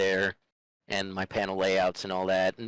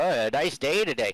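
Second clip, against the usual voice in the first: put-on chatty, pitched-up old-folks voice; 6 semitones higher than usual. Recalling mocking old people as a kid: imitating old people talking weather. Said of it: "the way old people talk about the weather".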